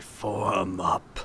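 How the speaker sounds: very quiet, low, scratchy skeletal rasp. Narrating the game, voicing an unseen figure in a dark room: skeletal scratchy voice. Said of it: "a very skeletal, scratchy voice say".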